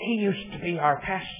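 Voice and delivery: soft, hushed whisper. Speaker retells what a woman seated behind him in church said, as a re-enacted whisper. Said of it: "she said in a whisper".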